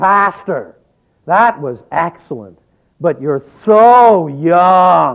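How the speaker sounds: very loud, resounding, stentorian declaiming voice. A pastor recalls a woman's weekly Sunday greeting, imitating a stentorian voice. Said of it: "say in a remarkably stentorian voice".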